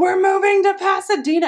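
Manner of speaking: put-on screaming. Retelling calling a spouse after a job offer: retelling a scream. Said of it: "And I'm screaming".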